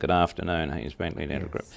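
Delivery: level receptionist tone, no smile in voice. Showing the worse way to answer a practice phone: without a smile. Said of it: "That sounds better than".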